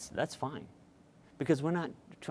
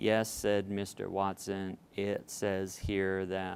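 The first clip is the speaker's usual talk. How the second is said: flat, slow, droning monotone with no inflection; 3 semitones lower than usual. Showing how a child might read without inflection: flat monotone reading. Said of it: "if your child reads like this, ... that is very monotone".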